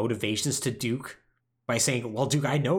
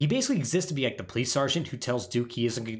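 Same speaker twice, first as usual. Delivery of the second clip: plain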